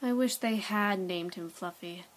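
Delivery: ordinary delivery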